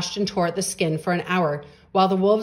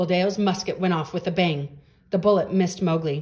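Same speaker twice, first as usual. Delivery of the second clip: ordinary delivery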